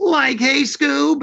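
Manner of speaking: very high, goofy cartoon voice. Recalling being asked on the spot for a Shaggy, doing the Shaggy voice. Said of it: "And I just did the voice for him".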